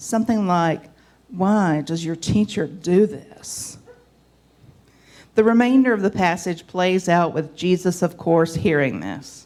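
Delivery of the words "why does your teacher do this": acted, judgmental, disapproving, superior, condescending tone. Acting out the Pharisees' question: imitating a judgmental, condescending question. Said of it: "with a pretty judgmental and condescending tone".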